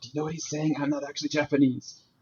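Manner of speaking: mock whisper, put-on whispered aside. Retelling what a girl sitting next to them whispered to them; retelling a whisper. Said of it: "she like kind of whispered to us like".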